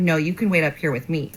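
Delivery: ordinary talk, nothing marked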